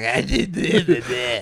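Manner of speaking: put-on slow, sloppy, slurred drunken speech. Warning against getting drunk before a show: imitating drunk slurring. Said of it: "slurring your words like".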